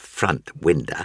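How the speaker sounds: ordinary delivery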